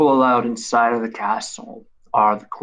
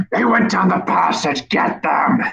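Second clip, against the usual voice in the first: high, shouting monster voice; 7 semitones higher than usual. Narrating a tabletop scene, voicing a creature shouting after the fleeing party. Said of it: "you hear him just shouting".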